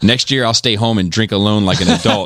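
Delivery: normal talking voice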